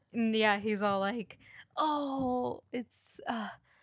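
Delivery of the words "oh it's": put-on stuttering, stammering delivery. Retelling how a man on the show answered: imitating stuttering. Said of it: "stuttering, like, for a minute long".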